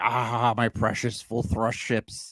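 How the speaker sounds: put-on old, veteran tabletop wargamer type voice. Mocking the sixty-year-old grognards who like spaceship games: imitating an old grognard gamer. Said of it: "They're like".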